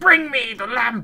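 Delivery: grand, slow, drawn-out theatrical villain delivery. Retelling the original Aladdin villain's line: imitating Jafar's theatrical shout. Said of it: "in the original, ... he's like".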